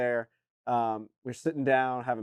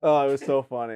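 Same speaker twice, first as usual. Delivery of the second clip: ordinary talk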